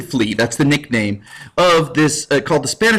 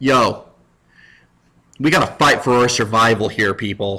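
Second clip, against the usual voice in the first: loud-spirited, rousing rallying cry meant to stir; 4 semitones lower than usual. Retelling a battle, imitating Elizabeth the First rallying inspirationally. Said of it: "she gets all inspirational".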